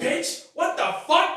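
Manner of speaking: put-on slow, emphatic angry speech. Imitating a friend's slow, disappointed-mad talk: imitating slow emphatic mad talk. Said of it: "He's looking on every syllable".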